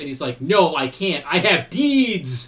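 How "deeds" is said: deeds enunciated with heavy stress. Quoting a father's reply to his son Shinji, stressing 'deeds'. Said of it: "enunciates deeds".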